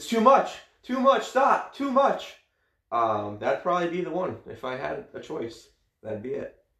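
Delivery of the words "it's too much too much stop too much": very high, loud yelling. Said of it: "and he'd just be yelling".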